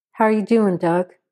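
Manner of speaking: ordinary talk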